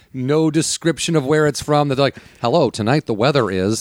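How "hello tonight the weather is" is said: robotic, flat newsreader monotone. Imitating how every newsreader sounds: imitating a newsreader monotone. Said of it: "There's some weird news monotone".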